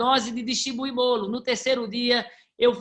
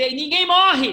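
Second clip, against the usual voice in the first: loud, high-pitched, full-throated shout; 5 semitones higher, 6 dB louder than usual. Retelling a car crash, shouting at the injured in the car: retelling a loud shout. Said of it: "olhei pro carro e eu gritei".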